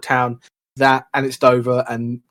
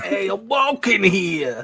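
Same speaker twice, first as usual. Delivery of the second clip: put-on, fake New York accent; 7 semitones higher than usual. Friends joking about how people sound, doing a put-on new york accent. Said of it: "they like New York thing".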